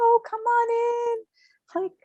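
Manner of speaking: very high, slow, drawn-out, sweet and happy. Voicing the mother coming through, inviting the girls in: imitating a sweet, happy voice. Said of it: "Like, so happy".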